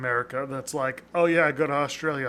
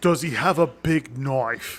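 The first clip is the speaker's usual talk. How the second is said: put-on Australian accent; 5 dB louder than usual. Joking with a co-host about cartoon Australians, put-on Australian accent. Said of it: "That's your Australian accent".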